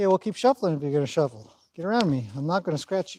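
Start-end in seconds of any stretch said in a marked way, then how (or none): none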